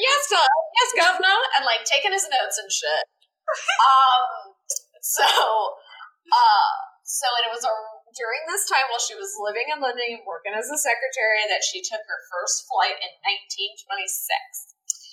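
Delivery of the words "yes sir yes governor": high, eager, servile mock deferential voice. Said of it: "And she was like".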